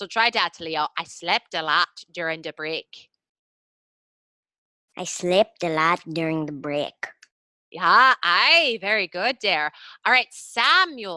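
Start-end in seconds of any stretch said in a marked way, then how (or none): 5.0-6.9 Irish accent, pitched low. Asked to try the sentence again, [name] repeats it in an Irish accent. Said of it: "So in your Irish accent".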